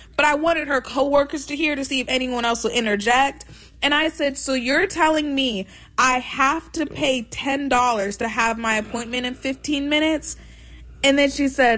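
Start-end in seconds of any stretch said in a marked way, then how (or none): none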